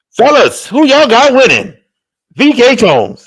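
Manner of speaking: very high, showy, swooping game show host voice. Asking the fellas who they've got winning, in a game show host voice. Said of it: "sound like a game show host".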